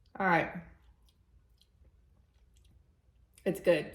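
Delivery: talking while chewing. Tasting vanilla buttercream on camera while talking: chewing, mouth full. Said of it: "making sounds, chewing sounds on".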